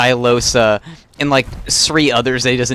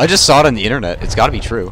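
usual speaking voice

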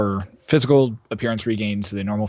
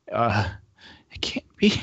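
crying out, wailing through sobs. A character rolls over a body and breaks down, wailing and crying. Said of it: "she just starts just wailing and crying".

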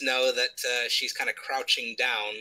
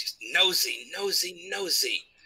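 very slow, growled grumble, pitched up; 5 semitones higher than usual. Describing a game scene, the storyteller voices the man's words; growling. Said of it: "he kind of just growls out".

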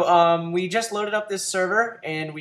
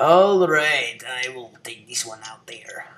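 put-on Russian accent, played big and epic; 6 semitones lower than usual. Saying they will take one out: Russian accent. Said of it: "Epic Russian accent".

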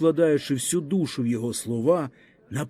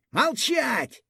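frenzied, furious shriek of rage, very high; 10 semitones higher than usual. A young officer cuts off a villager mid-sentence: furious shriek. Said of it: "вмить скажено заверещав офіцерик".

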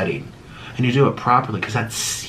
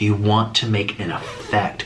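ordinary talk, nothing marked

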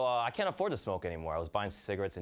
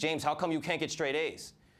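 put-on yelling, higher pitch; 5 semitones higher than usual. Retelling how mom reacted to bad grades: imitating mom yelling. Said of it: "She'd yell at me".

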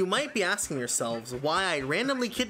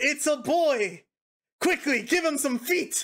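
grand proclaiming voice, higher; 9 semitones higher, 3 dB louder than usual. Imagining the scene at a birth, voicing the doctor: doctor proclaiming. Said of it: "The doctor proclaims".

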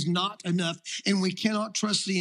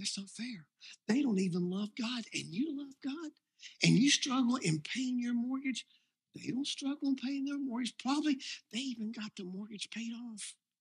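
put-on devil whisper, higher and quieter; 4 semitones higher, 7 dB quieter than usual. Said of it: "All he whispers".

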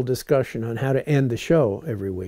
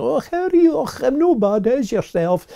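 put-on Scottish accent, pitched very high; 12 semitones higher, 5 dB louder than usual. Recalling visits to the speaker's mother's people in Scotland, Scottish accent. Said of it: "we'd go up to Scotland to my mother's people".

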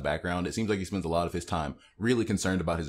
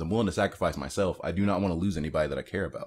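normal talking voice

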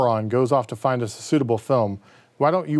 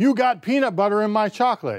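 very high, shrill, furious yelling; 10 semitones higher than usual. Narrating a story, the injured man shouts at the woman, angry shouting. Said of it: "he addressed the woman angrily, shouting".

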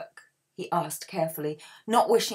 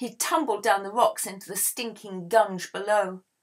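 plain

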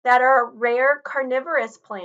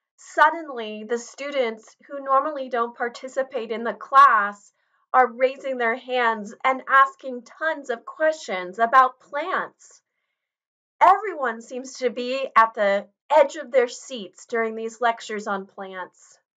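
usual speaking voice

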